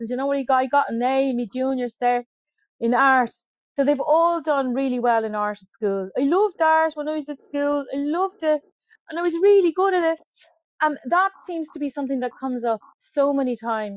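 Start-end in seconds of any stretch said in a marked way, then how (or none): 0.1-3.3 put-on everyday Irish Dublin accent. Repeating what the guys always say to him, in his Dublin accent. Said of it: "This is me Dublin accent".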